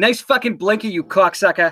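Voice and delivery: Boston pronunciation. Correcting the other speaker's line about a driver: Boston accent. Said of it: "I'm only gonna correct that a little".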